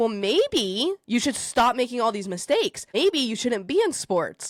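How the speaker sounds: acted angry ranting voice. Retelling scolding a crying athlete while coaching: imitating own angry rant. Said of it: "going off on this girl".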